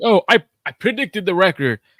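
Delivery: high, loud, know-it-all boasting. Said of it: "I know a lot of you guys be like".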